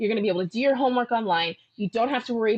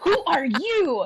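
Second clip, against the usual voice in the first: put-on overexcited gushing, higher; 7 semitones higher than usual. Retelling meeting Greg and gushing at him, imitating own past overexcited gushing. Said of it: "I was, like, so aggressive".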